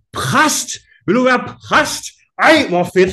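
very high, shrill, loud carrying shout. Retelling how a study counselor reacted on a train, imitating her shouting. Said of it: "Og så råber hun".

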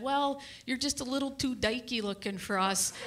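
ordinary delivery

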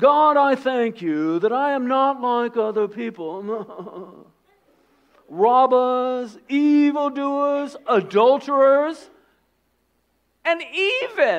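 put-on voice, high, loud, every word drawn out. Reading the Pharisee's prayer aloud: Thurston Howell voice. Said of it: "I figure it's like Thurston Howell".

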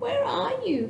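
put-on squeaky, thin, very high baby bat voice. Narrator reading a story, a baby bat alone on a branch, squeaky Stella Luna voice. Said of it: "Stella Luna squeaked".

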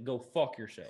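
put-on blunt delivery in a country-boy accent. Voicing a character hit by an arrow: country accent. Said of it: "he said that in his country ass".

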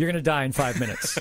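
plain

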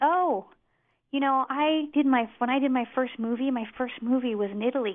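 sweet, friendly tone.

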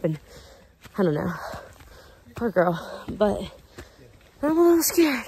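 winded and panting. Climbing a steep path while filming, speaker talks to viewers; out of breath. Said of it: "I'm out of breath".

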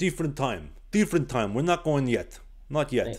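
put-on Eastern European accent. Retelling a coach's replies to a player asking for sticks, [name]'s thick Eastern European accent. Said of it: "he had a very thick Eastern European accent".

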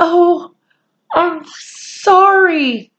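very high-pitched, sudden cry. Narrator voicing Omri, seeing the Indian's bleeding legs: crying out. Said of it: "cried Omri".

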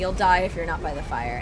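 ordinary delivery

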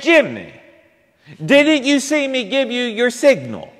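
play-acted screaming, high. Retelling how the mother screamed across the church: imitating a mother screaming. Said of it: "she screamed out".

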